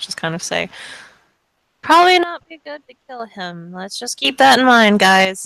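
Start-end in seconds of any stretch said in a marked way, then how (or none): 1.8-5.5 high, raised voice piping up from the back. A player's character speaks up from the back while the group looks ready to attack, quiet voice. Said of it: "this quiet voice in the back".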